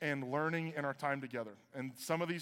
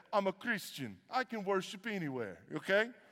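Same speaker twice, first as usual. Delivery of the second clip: put-on heavy Jamaican accent throughout; 4 semitones higher than usual. Retelling a story about Clayton Munn, imitating his thick Jamaican accent. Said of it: "this thick Jamaican accent".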